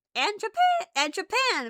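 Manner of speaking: voice cracking and breaking mid-line. Explaining to listeners what fans make of country personifications, voice cracking. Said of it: "Voice crack".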